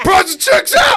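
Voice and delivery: shouting with excitement. Calling out a guess to the group, excited yelling. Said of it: "I'm sorry for yelling".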